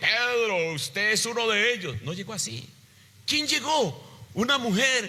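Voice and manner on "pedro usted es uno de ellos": brawny, menacing, threatening soldier voice. Imagining a Roman soldier accusing Pedro, in a mock-menacing soldier voice. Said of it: "con una voz amenazante".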